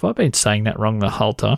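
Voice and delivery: ordinary talk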